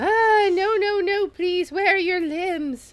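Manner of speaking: terrified, begging tone. Voicing a patient frightened by a visitor without limbs: terrified. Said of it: "Vaezel seems very terrified of you".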